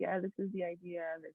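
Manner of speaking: hushed, very soft, level, flat monotone. Pitch judge demonstrating how a nervous presenter pitches an idea, flat monotone. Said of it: "very monotone and they're just like".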